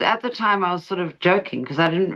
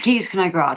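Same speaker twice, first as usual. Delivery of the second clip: ordinary talk, nothing marked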